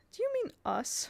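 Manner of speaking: offended, indignant tone, very high pitched. Barney answers Mrs. Polk after she wags her tea cloth at the children; indignant. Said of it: "Barney said indignantly".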